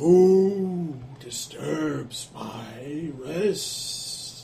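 distant hollow echo, "my" drawn out. Game master voicing a woken corpse answering a spell: hollow, echoing, distant voice. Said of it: "You hear this hollow, echoing voice as if coming from a long way off".

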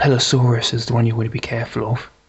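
whispering in a character voice. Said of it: "taps you on the shoulder and whispers into your ear".

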